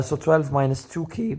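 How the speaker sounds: cracking voice. Solving an exponent equation aloud for viewers: voice crack. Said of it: "ignore that voice crack".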